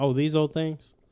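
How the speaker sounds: plain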